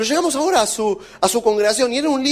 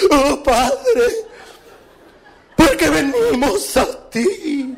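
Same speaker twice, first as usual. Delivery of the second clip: very slow, drawn-out, snivelling, weepy whimpering; 4 semitones higher than usual. Mocking people who suddenly start whimpering when it is their turn to pray. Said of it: "empiezan a lloriquear".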